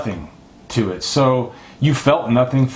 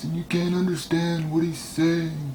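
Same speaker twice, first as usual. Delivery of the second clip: put-on mumbled villain voice, much quieter; 3 semitones higher, 8 dB quieter than usual. Reviewer mocking an actor's performance in a movie, imitating a mumbled villain voice. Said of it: "that voice that I just did".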